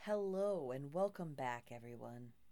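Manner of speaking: put-on public radio host voice, announcer-style delivery. A host welcomes everyone back, putting on an NPR voice. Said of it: "We're using our NPR voices now".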